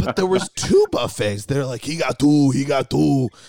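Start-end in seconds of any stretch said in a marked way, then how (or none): 1.8-3.3 put-on Austrian-style accent. Telling how many buffets there were, in an Arnold Schwarzenegger voice. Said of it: "in my Arnold Schwarzenegger jingle all the way voice".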